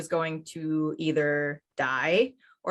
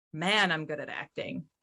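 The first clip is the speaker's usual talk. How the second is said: put-on muttering under breath; 4 dB quieter than usual. Retelling a quoted remark from an interrogation: imitating muttering under breath. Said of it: "Then under her breath says".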